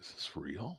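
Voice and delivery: soft, awed voice. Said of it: "I was like".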